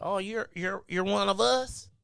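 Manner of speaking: voice of a Texas local. Retelling what people in texas say to him: imitating a texan. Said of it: "they be like".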